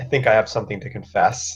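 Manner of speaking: hushed, confiding stage whisper. Voicing a character kneeling by a dead body, whispering. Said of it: "just kind of whisper at her".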